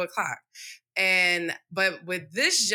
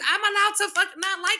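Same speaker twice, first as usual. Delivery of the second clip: play-acted shrill, high-voiced yelling, pitched way up; 13 semitones higher than usual. Retelling an argument with a boss: retelling a yell. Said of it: "I was yelling at her just like this".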